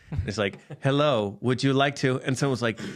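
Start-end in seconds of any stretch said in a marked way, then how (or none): 0.8-2.2 flat, all one note, computer text-to-speech robot voice. Describing a game beta's placeholder computer voices, in a monotone robot voice. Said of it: "Sounds like a robot".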